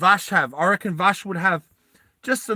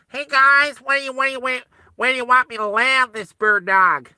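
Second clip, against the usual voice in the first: put-on nasal American accent, nose blocked, higher; 6 semitones higher than usual. Voicing a Canadian character, talking American with a blocked nose. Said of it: "talk American and block my nose".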